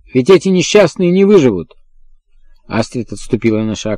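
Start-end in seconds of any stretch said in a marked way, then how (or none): 0.2-1.8 high, shouted crying out. A man suddenly interrupts the others, shouting. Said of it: "Финкль закричал".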